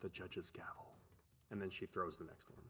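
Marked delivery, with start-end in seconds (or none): 0.0-1.0 quiet muttering under breath, quieter. Voicing a card-dealer naming the card she throws: muttered under her breath. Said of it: "you just hear under her breath just say".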